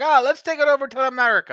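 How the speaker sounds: put-on Irish accent slipping in accidentally. Speaker quotes people in the United Kingdom, slipping into an accidental Irish accent. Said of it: "I don't know why I sounded Irish there".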